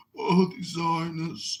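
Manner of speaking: put-on slow, boring voice. Imitating how Rolf always talks: imitating Rolf talking slowly. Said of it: "And he talks so slow".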